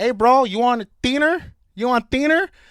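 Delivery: very loud, high-pitched put-on Mexican accent. Retelling what a football teammate said at a party: imitating a Mexican accent.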